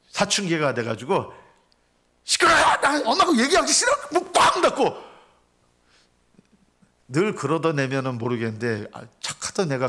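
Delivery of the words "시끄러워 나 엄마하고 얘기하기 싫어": put-on very high, shrill, shrieked teenage yell. A speaker acts out a teenage son shouting at his mother, imitating a teen yelling. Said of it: "다 들릴 정도로".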